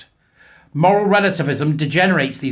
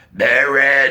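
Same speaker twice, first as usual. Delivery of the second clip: very deep, low, possessed demonic voice; 3 dB louder than usual. Recalling the girl in the bedroom calling out the priest's name, really deep voice. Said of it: "In that really deep voice".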